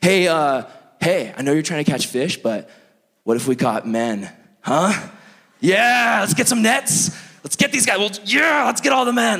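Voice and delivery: slightly unhinged, crazy-sounding delivery. Acting out Jesus calling out to fishermen: imitating someone sounding crazy. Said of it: "he probably sounded kind of crazy".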